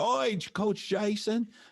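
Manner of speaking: put-on Australian accent, very high, slow and drawn out. Retelling how Australians at a meet said Coach Jason: imitating an Australian accent. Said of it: "I made him say Coach Jason in their accent".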